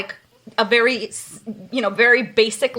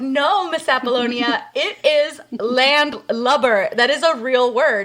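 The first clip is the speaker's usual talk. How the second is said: ordinary talk, nothing marked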